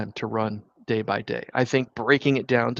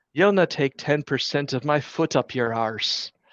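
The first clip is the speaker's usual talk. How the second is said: Irish brogue, done as fully as possible; 3 semitones higher than usual. Retelling replying to a demand for ten percent of revenues, in an irish brogue. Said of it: "in the finest Irish brogue I could muster".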